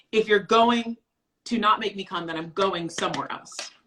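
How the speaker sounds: ordinary talk, nothing marked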